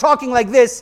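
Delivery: voice lifted hard. Speaker demonstrates delivering the same words with a raised voice. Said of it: "raising your voice".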